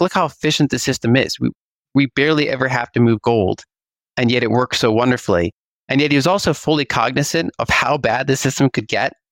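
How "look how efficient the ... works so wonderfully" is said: normal talking voice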